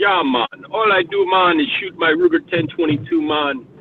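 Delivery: put-on Jamaican accent. Describing a Jamaican guy from a gun channel, the speaker mimics him in a put-on Jamaican accent. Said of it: "my Jamaican accent".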